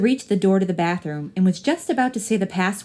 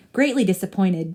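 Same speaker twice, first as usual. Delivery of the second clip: ordinary delivery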